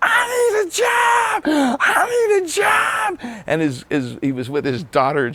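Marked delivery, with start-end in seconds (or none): 0.0-3.4 very high, very slow, drawn-out hollering scream. Retelling how a musician yelled from a car window: imitating someone screaming. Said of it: "rolls down the window and screams".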